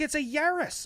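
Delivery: put-on Irish accent, pitched very high. Retelling a stitched video mocking the car's name: imitating an Irish accent. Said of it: "that's like an Irish accent".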